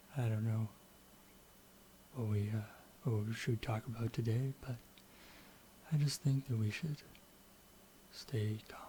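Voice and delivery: talking very quietly. Testing a microphone by showing how very quiet talking sounds: talking really quietly. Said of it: "let's also try me talking really quietly".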